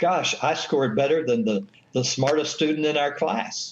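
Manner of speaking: ordinary talk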